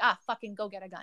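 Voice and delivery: normal talking voice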